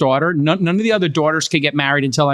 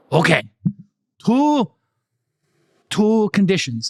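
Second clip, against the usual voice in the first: put-on Korean accent, pitched up; 5 semitones higher than usual. Retelling asking for his daughter's hand, quoting the father-in-law: imitating a Korean accent. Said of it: "what's your Korean accent?".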